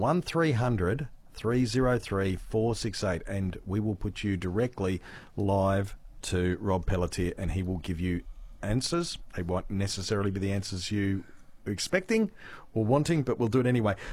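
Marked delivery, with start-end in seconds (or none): 0.0-3.2 slow, deliberate, much slower delivery. Repeating the phone number for people who want to call, said slowly. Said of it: "I'll say that slowly".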